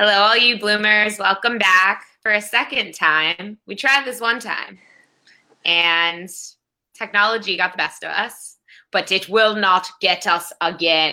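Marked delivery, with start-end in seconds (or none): 8.9-11.1 rousing war-film hero accent, like a battle cry. Welcoming viewers back after a technical failure: Braveheart accent. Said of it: "Was that Braveheart?".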